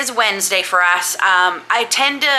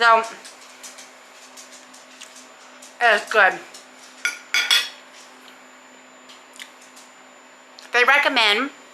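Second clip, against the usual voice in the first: speaking with full mouth. Tasting a pork supper, the speaker talks with mouth full. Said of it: "sorry, my mouth is still full".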